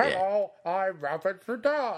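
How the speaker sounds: muffled, slow, high voice, as if behind hand. Imagining a phone call where the neighbor fakes being someone: imitating Victor talking through his hand. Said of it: "with his hand over his mouth".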